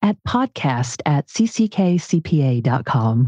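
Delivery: low radio announcer voice.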